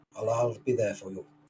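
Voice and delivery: hushed, soft, quiet half-whisper. Finishing a ritual over the bodies in character, half-whispering quietly. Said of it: "I will just whisper quietly".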